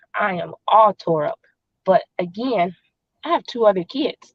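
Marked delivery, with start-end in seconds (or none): none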